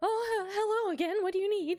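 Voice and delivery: nervous, high-pitched voice. Voicing Mayim as she's asked if she needs anything: nervous Mayim voice. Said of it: "Did I do like nervous voice?".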